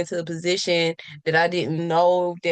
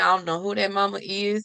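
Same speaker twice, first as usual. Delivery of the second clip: ordinary talk, nothing marked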